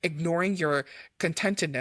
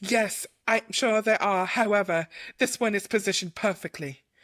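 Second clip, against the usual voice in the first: put-on British accent, pitched a touch high; 5 semitones higher, 3 dB louder than usual. Playing a role while a partner cheers them on, in a british accent. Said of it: "I love that you gave her a British accent".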